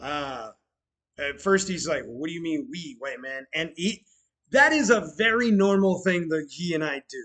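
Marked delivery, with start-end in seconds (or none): 2.0-3.5 defensive, sharp delivery. Retelling a friend's comeback about moving tables: imitating someone defensive. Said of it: "He's now defensive".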